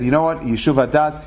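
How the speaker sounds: normal talking voice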